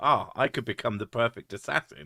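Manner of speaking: plain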